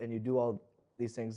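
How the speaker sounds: usual speaking voice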